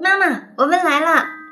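cheerful calling out. Lulu enters the room with her grandmother, bringing a meal to her mother: cheerfully calling out. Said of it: "露露便欢快地叫着".

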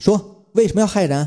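pointed, accusing, demanding, interrogating tone. Holding down someone who tried to run, the speaker questions her, loud interrogation. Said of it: "周茶茶大声的质问说".

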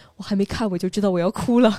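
mock secretive, furtive aside. Retelling what a best friend secretly said while watching the film together, retelling a secret aside. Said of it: "偷偷跟我说".

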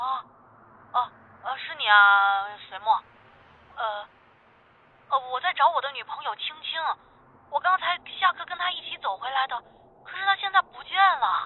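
put-on groggy, bewildered, dazed, halting, stammering speech. Retelling what the roommate said on the phone: imitating someone dazed and confused. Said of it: "咪咪瞪瞪地跟我说".

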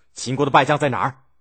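furious, fast voice. Reading a story: a man storms in to confront his ruler, angrily demanding. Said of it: "怒气冲冲地问".

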